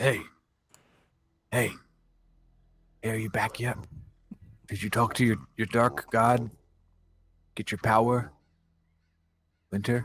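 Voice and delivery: acted, in-character half-whispered voice. Crouching by a sleeping companion in a game scene: in-character half-whisper. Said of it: "and I'll whisper".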